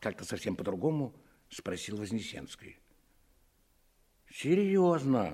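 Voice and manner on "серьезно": offended, hurt tone. Narrating a story, a man answers a question, sounding offended. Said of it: "сказал почему-то обидевшись Фроленко".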